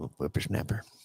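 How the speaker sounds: put-on cranky old grandpa voice, breathy, nearly whispered. During a table read, doing the grandpa voiceover. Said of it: "the grandpa voiceover".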